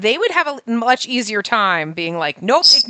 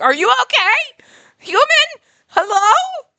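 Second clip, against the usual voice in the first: very high, loud, frantic bird call; 5 dB louder than usual. Voicing the bird calling out when it cannot see the speaker: imitating a panicking bird. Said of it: "freaking out".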